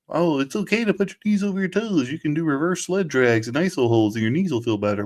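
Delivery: put-on dorky nerd voice. Quote the guy who came out in the sports performance world, in a Knees Over Toes Guy nerd voice. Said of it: "Is that your nerd voice?".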